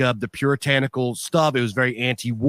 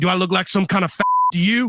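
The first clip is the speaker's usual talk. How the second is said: acted, high, swooping, pissed-off, offended tone; 6 semitones higher than usual. Retelling an uncle's reply to a teenager's question: imitating Uncle Danny pissed off. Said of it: "He got, like, real pissed at me about it".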